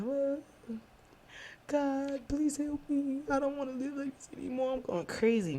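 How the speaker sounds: mock tearful crying, very high-pitched. Retelling kneeling down to pray: imitating own crying prayer. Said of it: "I'm crying".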